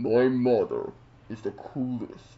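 deep, mechanical villain voice. Someone says a short line in Darth Vader's voice: Darth Vader voice. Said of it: "in Darth Vader's voice".

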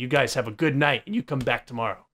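super, dead serious tone. Closing out a show episode to viewers; super serious. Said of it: "Just got like super serious there at the end".

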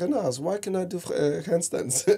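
high, fake French accent. Retelling a question from a student struggling in class: imitating a French accent. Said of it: "she had a French accent".

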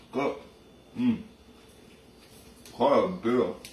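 speaking while chewing, through a mouthful of food. Tasting a hot pepper during a review, talking with mouth full. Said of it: "Maybe finish your mouthful first".

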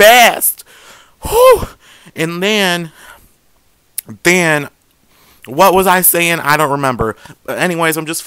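winded, out of breath. Speaker applying brow powder, out of breath from talking fast. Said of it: "I'm out of breath".

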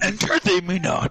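put-on little alien sage voice. Playing an imitation round where players impersonate celebrities: Yoda voice. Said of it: "I'm Yoda".

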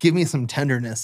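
normal talking voice

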